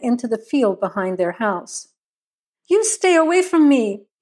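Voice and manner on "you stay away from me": high-pitched, full-throated shriek. A woman fleeing a wounded man with a rifle, screaming. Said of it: "Kathy Ann screamed".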